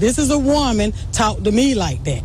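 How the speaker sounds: plain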